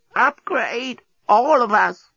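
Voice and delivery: croaking, very high, slow, drawn-out ancient voice. The creature waves a device under the despot's nose: croaking ancient voice. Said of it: "croaked in an ancient voice".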